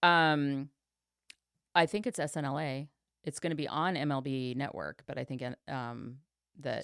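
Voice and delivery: ordinary talk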